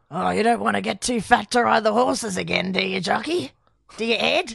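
put-on deep woman's voice. Acting out Val teasing Ed about riding horses: deep woman's voice as Val. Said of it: "A woman's deep voice".

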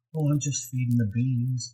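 put-on creepy, dead-calm, soft delivery. Imitating an actor's switch from screaming to calm: imitating a real calm voice. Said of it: "then he goes to this real calm".

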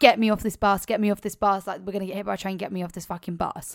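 acted loud, frantic, freaking-out panicked yelling. Retelling a woman on the bus who starts freaking out: imitating someone freaking out. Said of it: "she starts fucking freaking out".

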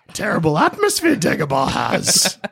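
tiny, wise, little alien sage voice. Speakers improvise a Dagobah scene; one voices the master: Yoda voice. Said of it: "You be Yoda".

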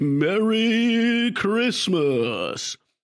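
high, drawn-out announcer call, "merry" stretched out. Speaker imagining the announcer at home at Christmas, Bruce Buffer announcer voice. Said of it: "if they both just talk like that".

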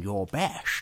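put-on thick, heavily laid-on Scottish accent. Quoting Sean Connery's reply: thick Sean Connery Scottish accent. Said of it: "really laying on the Scottish accent".

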